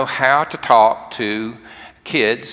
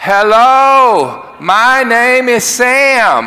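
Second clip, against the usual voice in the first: very loud, over-careful, high-pitched, one word stretched; 11 semitones higher, 8 dB louder than usual. Retelling bending over to greet a man for the first time: retelling speaking too loudly. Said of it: "Just about that loud".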